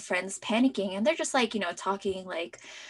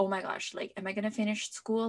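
ordinary delivery

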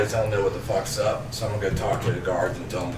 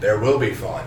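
plain

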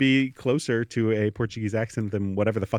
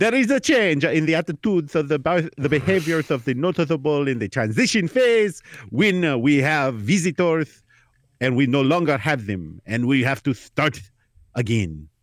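put-on Portuguese accent; 4 semitones higher than usual. Answering a question about Barcelona, in a put-on Portuguese accent. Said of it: "whether that accent was good or bad because they don't know what Portuguese people sound like".

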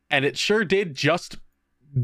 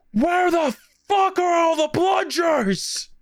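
mock furious, very high shrieking outburst. Retelling storming upstairs to the supply room, acting out a furious outburst.

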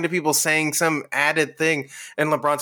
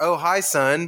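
mock stilted line reading, slower pace. Speaker quotes how LeBron delivers a line, in a Tommy Wiseau-like way.

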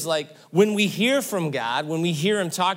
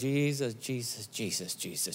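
put-on muttering under breath, much quieter, lower; 7 semitones lower, 11 dB quieter than usual. Speaker retells a mom in a roller coaster line, imitating muttered prayer under breath. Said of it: "pray Jesus' name under her breath".

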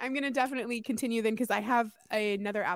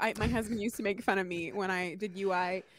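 ordinary talk, nothing marked

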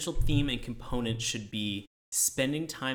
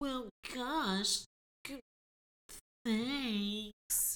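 put-on boyish reindeer voice, higher, quieter; 11 semitones higher, 6 dB quieter than usual. Asked to do the Rudolph voice, replying to Clarice in the Rudolph voice. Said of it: "Can you do the Rudolph voice".

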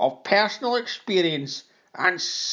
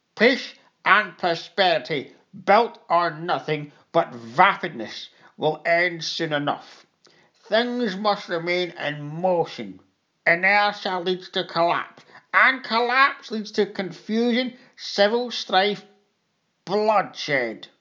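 put-on angry, bitter old man; 3 semitones higher than usual. Reading a story aloud, the narrator voices the old augur answering the narrator: Galias, angry old man. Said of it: "The augur was struggling into one of the leather chairs. / and here he pointed a shaking finger at me, / said the old man bitterly, / the old man reached up with the other to loosen his cape and slowl".

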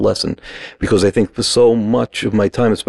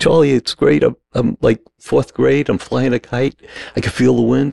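weepy, tear-soaked words spoken through crying; 4 semitones higher than usual. Answering charlie while flying a kite in fourth grade, imitating himself crying. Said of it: "And through the tears".

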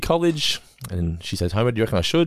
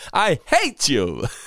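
cheerful, gleeful, pitched-up put-on voice; 5 semitones higher than usual. Showing anything sounds happy and joyful said in Jon Lovitz voice. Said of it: "everything sounds happy and joyful when you say it like John Lovitz".

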